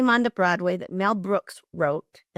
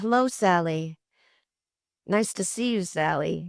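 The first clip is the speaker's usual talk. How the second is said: mechanical, robotic voice. Recounting how a man stiffly shook hands and greeted sally, retelling robotic speech. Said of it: "and speaking robotically".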